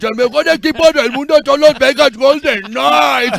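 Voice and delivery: very high, very loud cartoon-dad voice in Spanish. Asked by the host for a little bit of Homer, perform it in Homer Simpson voice. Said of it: "Can you give me a little bit".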